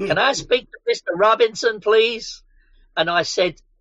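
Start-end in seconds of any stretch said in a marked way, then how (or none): 0.0-2.4 attempted American accent, higher pitch. Retelling what a caller on the phone asked: bad American accent. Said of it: "I'm not very good at American accents".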